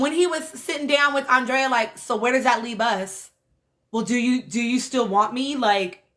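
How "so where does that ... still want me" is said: put-on insecure voice. Retelling how Kendall talked to Andrea: imitating Kendall sounding insecure. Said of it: "he's so insecure".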